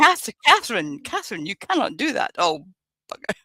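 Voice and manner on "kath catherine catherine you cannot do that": high, swooping, stern scolding motherly voice. Voicing the inner voice that warns against wrongdoing: imitating mother's voice. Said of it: "that voice sounds like my mother".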